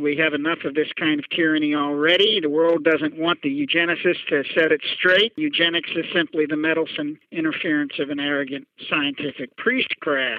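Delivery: ordinary delivery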